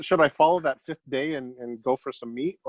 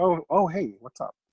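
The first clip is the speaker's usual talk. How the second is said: put-on softened voice, higher pitch; 3 semitones higher than usual. Retelling a greeting while picking up mattresses for his kids: retelling own softened voice. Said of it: "Softened your voice".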